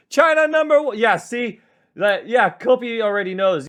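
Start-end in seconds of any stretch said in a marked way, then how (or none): 0.1-0.9 mock shrill, very high, loud yell. Retelling what players shouted in game voice chats: imitating players shouting. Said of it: "They'd be shouting".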